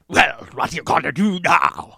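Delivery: menacing, creepy movie-monster villain voice. Describing a creepy prosthetics-wearing character to a friend, imitating a creepy villain. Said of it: "so fucking creepy and he's like".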